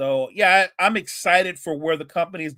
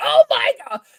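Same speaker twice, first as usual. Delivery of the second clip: very high, screechy shriek; 4 dB louder than usual. Remembering a wrestling announcer's famous call: Joey Styles' high screechy voice. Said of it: "Joey Styles' high screechy voice".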